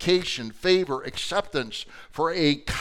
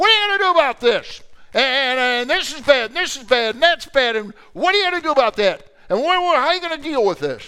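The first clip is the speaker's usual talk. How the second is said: loud, high-pitched screaming tirade; 8 semitones higher, 5 dB louder than usual. Retelling how a judge came at you in the hallway, imitating him screaming. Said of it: "he starts screaming at me in the hallway".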